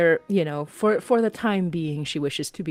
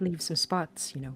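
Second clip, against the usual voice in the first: quick, quieter muttering under the breath; 7 dB quieter than usual. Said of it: "very quickly under her breath is like".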